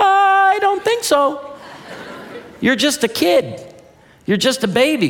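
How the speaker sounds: high, slow, protective, worried dad voice.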